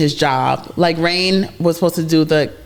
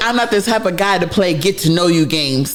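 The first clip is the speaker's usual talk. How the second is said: ordinary talk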